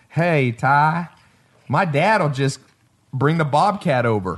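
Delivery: put-on old easy, offering manner of talking. Retelling needing a basketball court, the speaker imitates how he talked. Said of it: "he used to talk like this".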